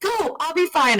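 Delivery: very high, friendly, nice yell. Telling how a fellow swimmer with a cramp urged the speaker on: retelling a friendly yell. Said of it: "She yells at me like in a nice way".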